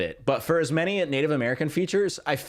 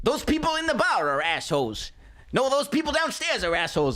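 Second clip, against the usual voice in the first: mimicked rural Minnesota man's voice, higher pitch; 9 semitones higher than usual. Retelling how a man talks before switching voices: imitating a rural Minnesota man. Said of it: "The code switching is so funny".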